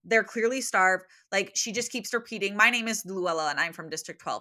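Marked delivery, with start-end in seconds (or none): none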